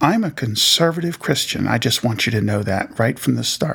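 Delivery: acted very stern, severe, no-nonsense delivery. Retelling what a woman said, leaning over the table: imitating a stern remark. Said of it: "very sternly".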